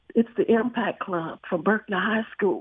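quiet, soft delivery. Retelling answering people outside a restaurant who asked who they were, a quiet remark. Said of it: "And I quietly said".

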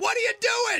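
high, loud yell.

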